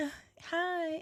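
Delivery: put-on flirtatious voice. Showing the other speaker a flirtatious voice: put-on flirtatious voice. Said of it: "My flirtatious voice would be like".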